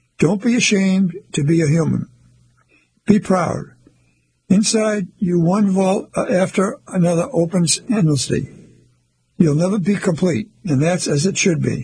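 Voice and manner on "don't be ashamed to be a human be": usual speaking voice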